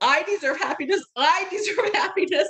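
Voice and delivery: play-acted blubbering through sobs, very high. Retelling own reaction in that moment, imitating own past self blubbering. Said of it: "because I was blubbering so badly".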